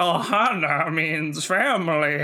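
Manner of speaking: put-on decrepit old man voice, "Ohana" stretched out. Repeating a loved movie line delivery: Stitch as an old decrepit man. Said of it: "he makes Stitch sound like an old, decrepit man".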